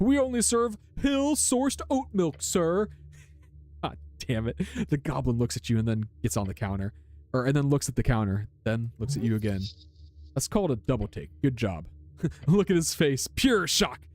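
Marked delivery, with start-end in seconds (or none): 0.0-2.9 haughty, snooty delivery, high-pitched and drawn out. Answering a customer in a role-play, in a snobby tone. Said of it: "Answer in a snobby tone".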